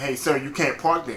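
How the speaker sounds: ordinary talk, nothing marked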